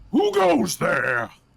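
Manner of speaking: thunderous, very loud, rough-edged booming voice. Narrating to players moving forward, voicing a voice from higher on the mountain: booming voice. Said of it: "a voice is going to boom out".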